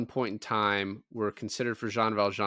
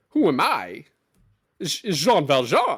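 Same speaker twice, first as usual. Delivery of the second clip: very slow, drawn-out character voice with swooping pitch; 5 semitones higher, 6 dB louder than usual. Doing the impression the other speaker asks for: Christopher Walken impression. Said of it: "Christopher Walken, go".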